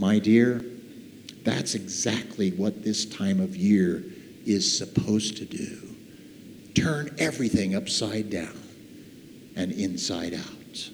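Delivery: gentle, soft, kind, hushed near-whisper. Narrating a man helping a woman pick up her belongings, speaking gently. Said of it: "Gently then".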